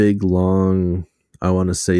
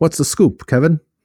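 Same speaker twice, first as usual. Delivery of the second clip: put-on very high, old-fashioned, old-timey radio announcer voice; 9 semitones higher, 4 dB louder than usual. Teasing the other speaker about how they talk to Kevin, old-timey radio voice. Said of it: "You talk to Kevin in your old-timey radio voice?".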